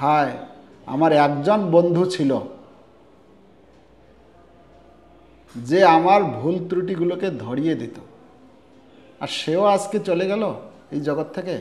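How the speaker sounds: ordinary delivery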